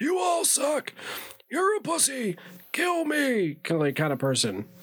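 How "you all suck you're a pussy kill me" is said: squeaked out high and slow. Describing an actor by imitating Stan's grandfather from South Park. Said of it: "Stan's grandfather from, like, South Park, where it's just like".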